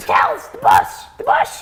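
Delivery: loud, slow, raspy owl character voice. Voicing an owl character for a friend who wants to hear it, raspy, loud owl voice. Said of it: "it's got to be something like really raspy and loud".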